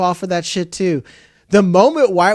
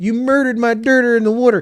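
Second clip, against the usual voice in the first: put-on higher-pitched Delco accent; 5 semitones higher than usual. Praising a show's consistent accent, the speaker quotes a line in a Delco accent. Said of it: "That's a consistent fucking accent".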